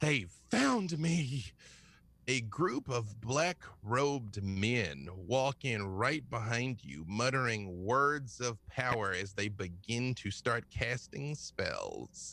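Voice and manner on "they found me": high, panicked, terrified shout. Voicing the injured man seeing enemies arrive: terrified shout. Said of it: "looking behind you with terror and shouting".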